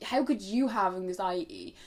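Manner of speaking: ordinary talk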